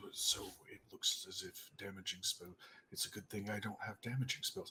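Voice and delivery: hushed, very quiet mumble under the breath. During a tabletop game, the character mutters as he moves: muttering under breath. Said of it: "is muttering under his breath".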